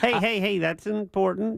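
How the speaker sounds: sarcastic-sounding delivery. Defending tourism tax spending on skyboxes to co-hosts: sarcastic tone. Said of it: "You sound sarcastic".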